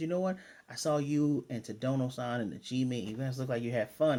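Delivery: ordinary delivery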